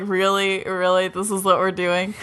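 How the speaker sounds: plain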